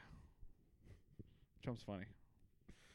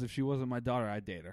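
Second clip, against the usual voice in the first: normal talking voice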